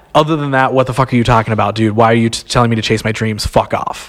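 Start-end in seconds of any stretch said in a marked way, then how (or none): none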